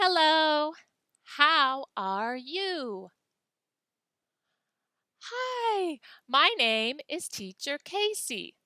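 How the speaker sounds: very slow, clearly enunciated. Teacher Casey showing how to greet someone slowly and clearly enunciated. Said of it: "Slow, enunciate well".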